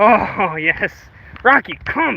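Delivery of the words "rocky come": strict, no-nonsense, stern commanding voice. Calling Rocky to come back to him, in a stern voice. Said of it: "You're making me use my stern voice".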